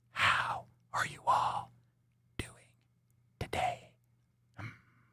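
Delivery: soft, unvoiced ASMR whisper.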